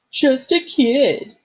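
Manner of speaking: loud, taunting mocking falsetto. Mimicking a friend's protest back at him in a mocking falsetto voice. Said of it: "mimicked in a falsetto voice".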